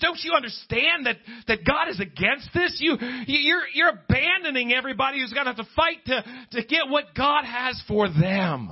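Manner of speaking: furious, stumbling, very angry, high-pitched delivery. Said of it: "very angry and says".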